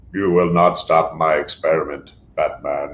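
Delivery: low, flat, robotic monotone. Quoting a villain from the animated series addressing Batman, in a RoboCop voice. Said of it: "He's got this RoboCop voice".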